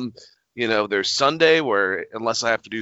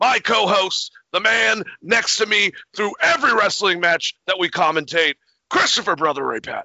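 put-on wrestling commentator voice, higher; 9 semitones higher than usual. Introducing the co-host on the show: failed Mauro Ranallo impression. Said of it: "I was trying to go for Mauro Ranallo".

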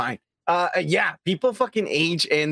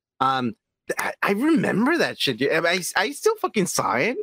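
ordinary talk, nothing marked

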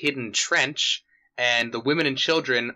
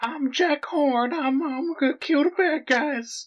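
very high, slow, drawn-out wacky voice. Telling a co-host about your favorite character in the movie, do a wacky Jack Horn voice. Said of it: "He's doing this wacky voice the whole time".

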